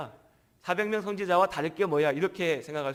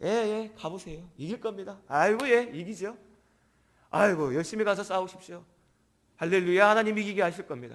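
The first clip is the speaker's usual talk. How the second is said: snide, needling, mocking sarcastic tone; 3 semitones higher than usual. Speaker acts out a reply to King Ahab with put-on mocking sarcasm. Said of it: "좀 비꼬듯이 하는 겁니다".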